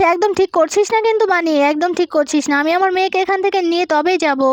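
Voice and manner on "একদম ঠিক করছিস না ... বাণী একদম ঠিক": usual speaking voice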